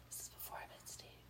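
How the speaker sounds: very quiet, barely voiced whisper. Telling a story from long ago to friends: whispering. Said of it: "You shouldn't whisper that".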